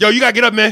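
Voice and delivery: firm no-nonsense voice. Telling a dude he has to get up, in a stern tone. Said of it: "I say it like this with a sternness so he knows I mean business".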